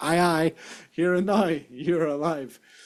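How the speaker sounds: put-on Northern Irish accent. Reading Roman numerals aloud as a joke: put-on Northern Irish accent. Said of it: "Northern Irish, ... Accent".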